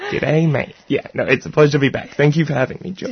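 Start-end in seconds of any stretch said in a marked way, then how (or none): 0.1-0.8 exaggerated put-on Australian accent, pitched up. Greeting the hosts on returning from a trip: put-on Australian accent. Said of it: "quote unquote Australian".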